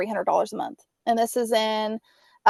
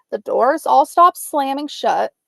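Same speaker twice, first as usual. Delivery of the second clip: ordinary delivery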